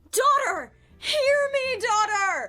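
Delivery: calling out with emotion. Asked how the line should be said, calling to a daughter, emotional crying out. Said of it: "That was emotion in my voice".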